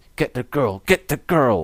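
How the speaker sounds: savage, bloodthirsty cry. Retelling what Steve Corino said about Alice in Danger: imitating bloodthirsty Steve Corino. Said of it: "with such bloodthirst in his voice, he says".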